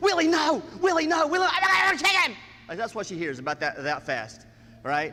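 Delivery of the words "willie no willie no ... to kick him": screaming, high and loud. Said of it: "she screams".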